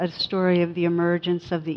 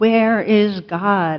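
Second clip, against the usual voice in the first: loud, stern, raised clergyman voice; 3 semitones higher, 6 dB louder than usual. Retelling a clergyman repeating his question to a frozen boy, raised voice. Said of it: "raises his voice and shakes his finger".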